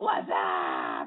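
very low what's up said with tongue out. A host shows a caller how to say it like the commercial: tongue-out Budweiser 'what's up'. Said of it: "Try it again with your tongue out".

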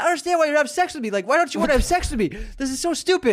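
shrill, very high-pitched complaining yell. Retelling a woman in the car who was refused, imitating someone yelling. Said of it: "And then she started yelling at me".

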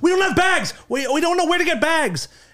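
high, loud, flustered shout. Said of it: "they were so flustered".

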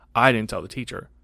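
mock cold, unbothered tone. Retelling what he told a first-grade classmate, retelling an ice-cold reply. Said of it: "I was like ice cold".

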